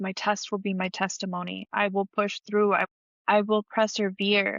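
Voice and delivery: ordinary talk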